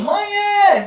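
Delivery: very high shout, mãe stretched with an added e. Showing how the word sounds when someone shouts it: shouting the word. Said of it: "a não ser que esteja gritando".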